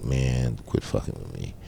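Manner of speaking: mock drunken whispering. Retelling leaning on something drunk, telling a man to quit it: retelling a drunk whisper. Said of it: "I'm drunk, so I'm leaning on the thing and I'm kind of whispering like".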